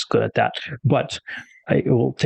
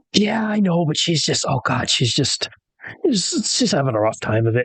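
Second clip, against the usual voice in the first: very nervous, anxious, fretting character voice; 3 semitones higher than usual. Voicing an expectant father pacing outside while his wife labors: nervous character voice. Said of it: "a very nervous, pacing Desderev".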